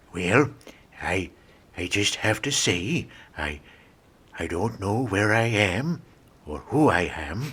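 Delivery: very low, slow, befuddled rambling voice. Acting out why Reagan declined: imitating a confused Reagan. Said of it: "But Reagan declined".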